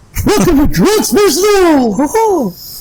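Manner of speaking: high, squeaky put-on cartoon character voice.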